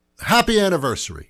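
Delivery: mock-cheerful sarcastic tone. Announcing a property tax raise as the anniversary celebration: sarcastic. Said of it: "I'm being sarcastic".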